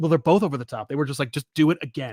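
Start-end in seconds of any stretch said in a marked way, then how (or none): none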